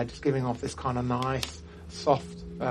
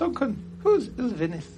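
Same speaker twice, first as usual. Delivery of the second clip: small put-on voice, much higher; 10 semitones higher, 3 dB louder than usual. Telling a story, the speaker voices a little voice asking duncan questions. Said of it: "You hear a little voice in there".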